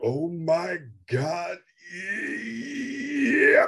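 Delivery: talking while breathing in. Showing how to do the impression, talking while inhaling: Charlton Heston impression. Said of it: "That's how you do Charlton Heston".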